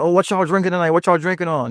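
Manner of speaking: high, hyped-up club DJ mic voice. Showing how to talk to the crowd on the mic: hype DJ on the mic. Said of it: "and get 'em hype".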